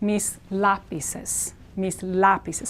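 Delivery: slow "lápices" with leaned-on stress on LA. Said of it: "stress here".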